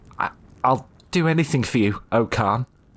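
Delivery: high, frightened, halting, stammering voice. Reading fiction, a woman answers the mighty Khan, stammering. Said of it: "stammered the woman".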